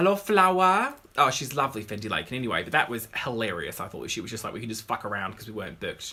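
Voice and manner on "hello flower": put-on Newcastle Tyneside Geordie accent. Speaker retries a quoted woman's accent after a wrong attempt, Newcastle accent.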